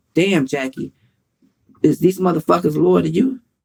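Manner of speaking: plain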